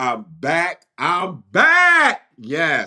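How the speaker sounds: very slow, drawn-out, loud, high, rising, swooping scream. Announcing to viewers after being away that you are back: screaming loudly. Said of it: "I'm sorry I'm screaming so loud".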